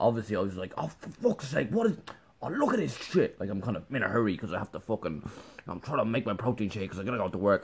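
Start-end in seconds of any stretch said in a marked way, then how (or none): 0.8-3.4 play-acted, high, exasperated, frustrated outburst of swearing. Retelling a razor spilling hair into the freezer: imitating own frustrated swearing. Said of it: "my reaction was not to laugh".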